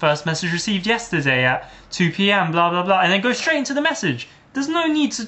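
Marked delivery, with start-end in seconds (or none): none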